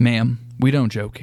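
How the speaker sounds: put-on very serious tone. Retelling the lady's reply to the speaker's wife, retelling a very serious reply. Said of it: "looked at her very seriously".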